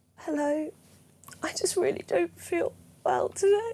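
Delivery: weak, sick voice near tears, very slow. Asked to do a voice not done in years: sick, tearful voice. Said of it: "Do your sick voice. / You always want to sound like you're crying".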